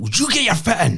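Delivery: very high yell at the top of the voice. Retelling what he shouted once it was five nil, retelling a shout. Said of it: "I just shouted at the top of my voice".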